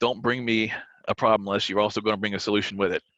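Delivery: ordinary delivery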